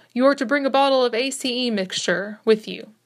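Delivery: ordinary delivery, nothing marked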